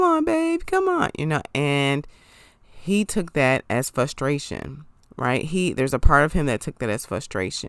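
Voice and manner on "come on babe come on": mock whiny pleading voice, very high. Retelling how Lindy spoke to him while playing: imitating Lindy's whiny tone. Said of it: "She had this, like, whiny tone".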